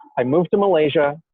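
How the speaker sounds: ordinary talk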